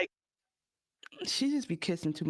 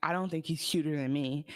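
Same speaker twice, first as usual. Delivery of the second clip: ordinary talk, nothing marked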